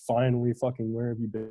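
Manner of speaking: play-acted frantic, panicky woman's outburst. Retelling a dream where a woman greets the speaker: imitating a panicked woman. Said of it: "she's like panicked".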